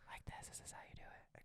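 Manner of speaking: soft whispering. Showing the other person how ASMR videos are done, ASMR whisper. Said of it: "You talk it like this".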